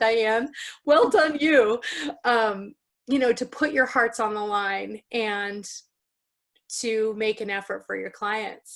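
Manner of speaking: choked up, voice catching and breaking with emotion. Speaker praises diane and the group, getting a little choked up. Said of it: "I'm getting a little choked up".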